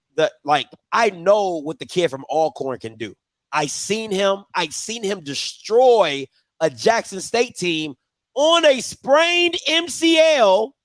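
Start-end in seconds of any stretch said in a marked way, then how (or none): 8.4-10.7 slow, emphatic, drawn-out yell, pitched way up. Speaker vouching for a player they saw play, yelling. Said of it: "I'm sorry to yell".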